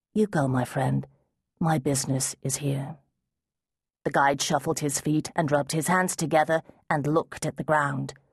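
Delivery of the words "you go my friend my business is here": quiet, soft voice. A man turns to his frantic guide, who begs him to leave: spoken quietly. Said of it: "spoke to him quietly".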